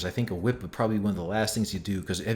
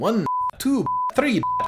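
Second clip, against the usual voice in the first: bad Transylvanian accent, much higher, slower; 4 dB louder than usual. Mocking how the rest of the movie sounds, doing the Count impression. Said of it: "sounds like the Count off Sesame Street".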